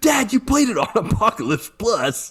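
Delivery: put-on very high, riled-up, angry child protest voice. Retelling a son's complaint after the game got too hard: imitating an angry son. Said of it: "he's getting all angry at me".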